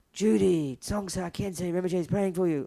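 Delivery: husky, half-whispered voice. Retelling what the friend heard in her coma: imitating a husky voice. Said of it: "this husky voice saying".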